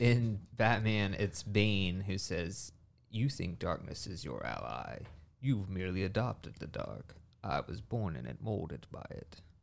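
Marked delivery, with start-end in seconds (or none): 3.1-9.4 soft, hushed vampire-like voice. Correcting a Batman quote that was messed up earlier: Bane impression. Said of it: "You sound like Dracula".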